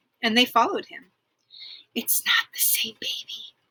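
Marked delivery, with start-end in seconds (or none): 1.9-3.5 whispered, quieter. Reading a story aloud, a child speaking to her brother: whispering. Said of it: "Jane whispered to Tim".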